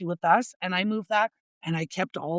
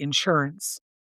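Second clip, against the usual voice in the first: Canadian pronunciation of 'insurance', lower pitch; 5 semitones lower than usual. Joking with the other speaker about how Canadians say it: Canadian pronunciation of 'insurance'. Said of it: "Or as we say in Canada".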